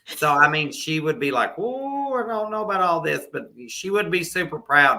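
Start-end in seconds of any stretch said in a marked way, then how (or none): 1.6-3.3 high, doubtful, scandalized pearl-clutching unease. Speaker acts out how an old-school woman would react watching it, imitating a scandalized woman. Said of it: "she'd be clutching her pearls".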